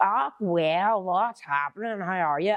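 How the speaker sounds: high, drawn-out, copycat parroting. Complaining that people repeat the speaker's lines back in the speaker's accent, mimicking them. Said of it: "just back at me when I say like".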